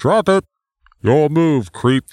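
put-on robotic cop voice. Riffing on a movie scene, the speaker switches to a RoboCop voice. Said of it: "That's way better".

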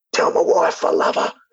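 put-on choking voice, words sputtered and forced out. Retelling what a man choking on a sultana said, imitating someone choking. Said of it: "while really he's choking".

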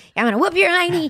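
loud, belted, very high-pitched cartoon voice. Listing voice roles, showing one of them: Buttercup voice. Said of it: "And then I was Buttercup".

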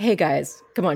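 plain

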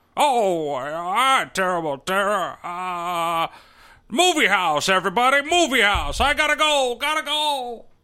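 put-on slow old-movie-star drawl, each "ah" stretched out. Imitating a character in a film review: Jimmy Stewart impression. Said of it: "Jimmy Stewart? Where did you come from?".

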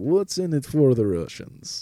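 put-on Russian accent. Retelling a conversation, the speaker quotes the woman in that accent. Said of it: "not do it with that accent".

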